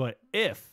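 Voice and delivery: "but if" enunciated, punched out word by word. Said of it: "when I'm enunciating words, this is her capitalizing".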